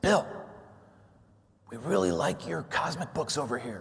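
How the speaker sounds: hushed secretive half-whisper. Retelling a phone call from a friend at Marvel Studios: retelling a half-whisper. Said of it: "and he's whispering".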